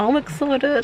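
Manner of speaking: faint touch of American accent on excited. Before going in to get Doodles and see Esther, in a slight American accent. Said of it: "I'm saying excited with a slight American accent".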